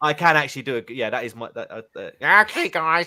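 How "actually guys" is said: high, loud puppet-style voice. Showing off an impression while the group discusses Zippy from Rainbow: Zippy voice. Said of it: "that's my zippy voice".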